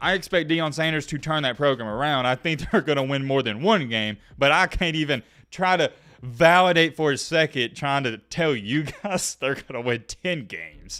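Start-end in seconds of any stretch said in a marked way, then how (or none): 8.0-11.0 slow speech broken by laughter. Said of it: "I'm sorry I'm laughing".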